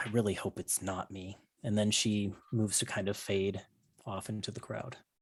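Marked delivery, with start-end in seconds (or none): 0.0-1.4 under-breath muttering, much quieter. Narrator voicing a woman as the players scurry away, muttered under her breath. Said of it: "you just hear her kind of under her breath go".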